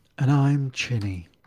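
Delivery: put-on, oddly polished public radio announcer voice. Introducing oneself at the podcast's start: weird NPR BBC voice. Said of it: "Chinny's talking in this weird N P R, B B C voice".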